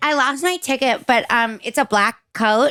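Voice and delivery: put-on sloppy drunk girl voice. Recalling coat-check work with a friend, imitating a drunk girl customer. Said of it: "It'd be like some drunk girl".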